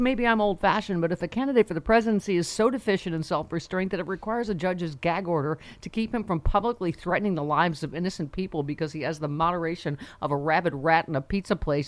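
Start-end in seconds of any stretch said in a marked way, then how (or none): none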